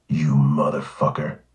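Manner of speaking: growled in low voice. A policeman comes close so he cannot be overheard, in a low growl. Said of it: "he growled at me in a low voice".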